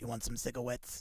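low, soft smoker voice. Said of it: "not like the".

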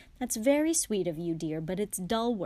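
plain reading voice

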